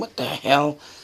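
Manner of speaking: quiet, hushed whisper under the breath. Retelling what was said while looking at a dark camera: imitating own whisper. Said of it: "you can hear me whispering".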